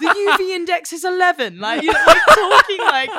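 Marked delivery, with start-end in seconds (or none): 0.0-1.6 put-on smart-kid British accent. Retelling kids in a performance piece waking up smart: put-on british accent. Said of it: "they've got a British accent".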